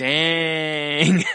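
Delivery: high, long, drawn-out dang. Showing a catchphrase said more drawn out: drawn out. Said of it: "more drawn out like".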